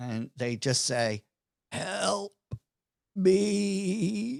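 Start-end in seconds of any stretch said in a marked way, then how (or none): 1.7-4.4 very cracked, croaking voice, rough and pitched high. Game master voicing a bony, skeletal figure reaching out to a player, very cracked, croaky voice. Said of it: "in ve- a very cracked, croaky voice".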